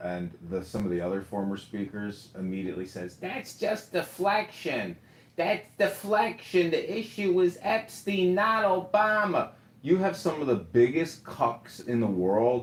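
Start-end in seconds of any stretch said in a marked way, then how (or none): 3.2-9.5 very high, slow, drawn-out comic voice. Quoting former speakers who dismiss a claim: sounding like Gilbert Gottfried. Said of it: "Why did you sound like Gilbert Gottfried".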